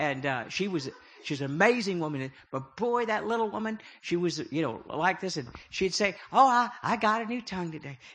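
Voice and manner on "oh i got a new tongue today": put-on Southern accent. Recalling what his mother used to say, imitating Polly Prater's Southern accent. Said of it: "She's a Southern".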